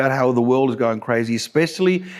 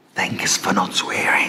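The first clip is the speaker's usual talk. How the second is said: barely voiced, hushed, secretive whisper; 6 semitones lower, 3 dB quieter than usual. Imitating people thanking him for not swearing, the line is whispered. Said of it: "they whisper it, they go".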